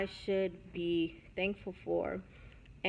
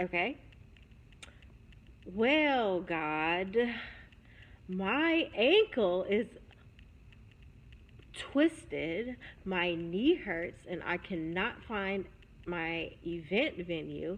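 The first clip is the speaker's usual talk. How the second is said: acted, very condescending, patronizing, over-explaining tone; 4 dB louder than usual. Speaker recounts praying after the husband's suggestion, retelling a condescending tone. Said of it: "just talking in a very condescending voice".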